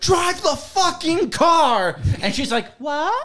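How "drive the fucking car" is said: put-on very slow, stretched-out, high, drawn-out screaming. Retelling a movie scene where Joel yells at Sarah, retelling a scream. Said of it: "He's screaming at Sarah".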